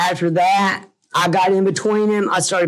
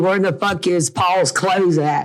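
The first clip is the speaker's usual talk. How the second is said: ordinary delivery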